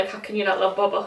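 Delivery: plain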